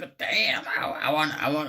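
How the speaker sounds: put-on cartoon kid voice. Retelling a cartoon scene in a character's voice: Bobby Hill voice. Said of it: "that's Bobby Hill".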